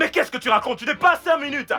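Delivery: shouting. In a drama argument, the other person says to stop: shouting. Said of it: "Mais arrête de crier".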